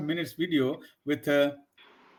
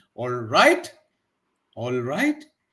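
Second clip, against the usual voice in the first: "all right" with "right" rising in an asking tune. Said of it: "that can be used in two different tone".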